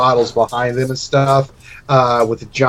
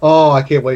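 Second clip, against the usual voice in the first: put-on cackling laugh while speaking. Retelling how a woman reacted to a request to see someone, imitating her cackling. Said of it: "She starts crackling".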